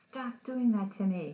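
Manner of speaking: acted, agitated angry screaming. Telling how a man got agitated at someone just standing there, imitating someone screaming angrily. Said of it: "really agitated and angry and starts screaming at Billy".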